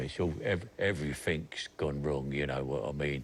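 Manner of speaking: grave, serious, put-on Cockney accent. Asked which accents he can do, showing cockney in a serious cockney accent. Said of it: "Cockney is very serious like that".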